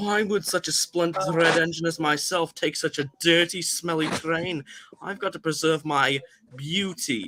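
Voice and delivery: put-on thick, heavy Liverpool accent. Retelling how a friend voices James the red engine: thick Liverpool accent. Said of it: "kind of like a like a thick Liverpool accent".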